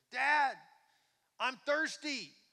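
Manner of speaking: put-on high, loud yell like a little boy.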